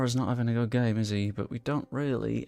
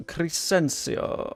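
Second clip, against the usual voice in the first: name said with a put-on French accent; 5 semitones higher than usual. Naming a player during a football game, french accent on a name. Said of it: "I've gone French when he's Dutch".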